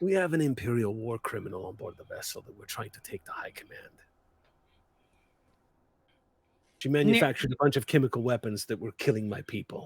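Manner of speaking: softly spoken, quiet, leaned-in delivery. Voicing a character who leans in to tell Neru: speaking quietly. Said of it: "quietly says up to you".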